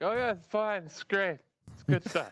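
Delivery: voice jumps up high-pitched. Retelling own reply to her asking if he's all right: imitating own soft high-pitched tone. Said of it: "When he takes the soft, high-pitched tone".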